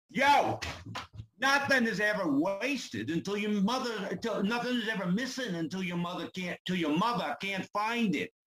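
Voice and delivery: put-on New York accent. A guest in an accent game takes the bonus round, doing a New York accent. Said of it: "I can do New York".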